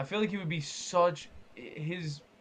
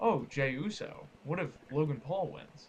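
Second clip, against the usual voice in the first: very proper, prim villain voice; 2 semitones lower, 4 dB quieter than usual. Imitating how John Cena sounds as a villain, proper John Cena villain voice. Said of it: "That's what it sounds like".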